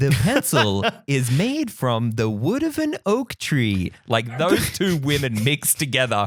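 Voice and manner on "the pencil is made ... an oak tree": TV documentary-style narration. Describing what a voice sounds like, doing a How It's Made narrator voice. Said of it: "the how it's made".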